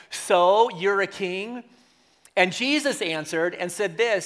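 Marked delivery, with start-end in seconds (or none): 0.1-1.6 put-on cynical tone. Retelling Pilate questioning Jesus at trial: Pilate's cynical tone. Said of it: "in a cynical sense".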